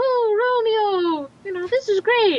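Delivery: put-on very high girl voice, drawn-out oh. Telling a story version of Shakespeare, voicing Juliet: high-pitched Juliet voice. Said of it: "I did the high pitched voice of".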